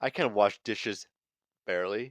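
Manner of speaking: ordinary talk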